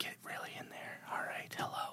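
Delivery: whispered, breathy ASMR whisper. Starting a comedy asmr segment: asmr voice. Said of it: "doing A S M R voices".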